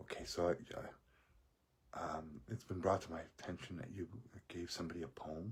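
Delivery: quiet, hushed whisper under the breath. Recounting what a man said after the speaker went back, retelling someone whispering. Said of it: "he's whispering".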